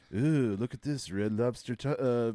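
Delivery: very low, deep, rumbling voice. Imitating a guy who talks in a really low voice, low voice. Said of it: "He's just talks in a really low voice like this".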